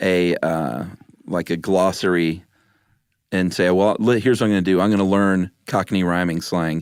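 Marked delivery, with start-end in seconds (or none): none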